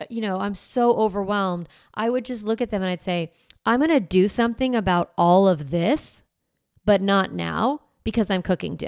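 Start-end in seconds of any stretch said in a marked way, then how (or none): 3.7-8.9 mock firm, very strong delivery with a snarky edge. Retelling what was said to the kids while cooking: imitating own strong, snarky tone. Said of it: "very strong and slightly snarky".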